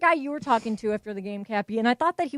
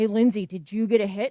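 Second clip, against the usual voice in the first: put-on, sinister, suddenly menacing, changed voice. Retelling how a stranger after the game spoke: imitating a suddenly menacing voice. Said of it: "completely changed his voice".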